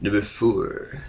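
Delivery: soft put-on nerdy voice. Host announcing the next comic issue, in his comic book guy voice. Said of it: "That's my comic book guy voice".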